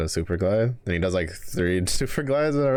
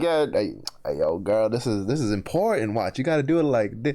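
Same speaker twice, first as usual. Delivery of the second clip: mocking, cocky, egotistic voice, higher; 4 semitones higher than usual. Retelling how a teammate's ego shows off moves: imitating a cocky teammate. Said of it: "his ego is be like".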